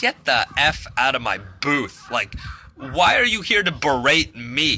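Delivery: ordinary delivery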